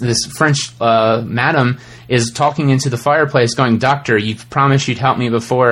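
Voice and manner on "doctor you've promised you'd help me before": ordinary delivery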